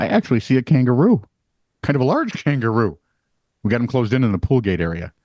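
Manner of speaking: usual speaking voice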